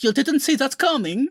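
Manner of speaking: very high, terrible fake Russian accent. Imitating Pietro's old terrible Russian accent from the films. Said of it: "made up their really terrible Russian accents".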